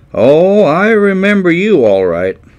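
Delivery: mock heavy sarcasm. Recounting being blackballed, the speaker quotes what he was told, imitating a sarcastic tone. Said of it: "in a sarcastic tone".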